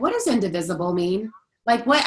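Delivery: ordinary talk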